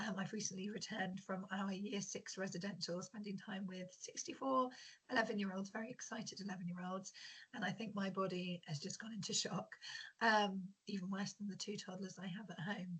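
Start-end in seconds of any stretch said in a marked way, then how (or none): 0.0-3.0 croaky, half-whispered voice. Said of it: "apologies first of all for my croaky voice".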